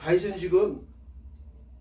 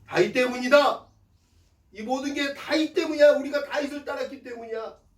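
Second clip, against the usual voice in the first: high, loud, resentful shouting like a crowd. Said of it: "라고 원망하면서".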